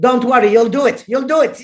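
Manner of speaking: heavy put-on German accent. Retelling what the conference organizer said: imitating a heavy German accent. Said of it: "with her heavy German accent".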